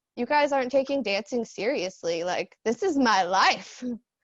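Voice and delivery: ordinary talk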